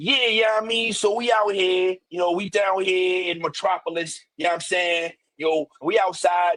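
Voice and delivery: put-on, mimicked New York accent. Speaker imitating how a man talked, imitating New York talk. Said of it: "talking like he was like you know like [name]".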